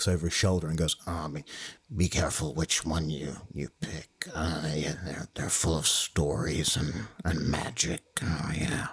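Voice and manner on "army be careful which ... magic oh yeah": put-on low-key, subdued impression voice. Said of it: "It's not a particularly good impression".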